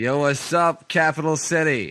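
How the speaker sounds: street radio DJ voice. Redoing the blown show intro, in a homie radio station intro voice. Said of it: "give us a homie radio station intro".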